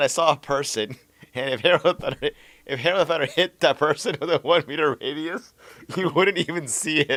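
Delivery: giggling through words. Retelling what a player said, can't stop laughing: laughing while talking. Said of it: "Sorry, I can't stop laughing".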